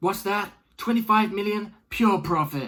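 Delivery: awful put-on American accent. Speaking mid-monologue, slipping briefly into an awful American accent. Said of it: "that's an awful American accent".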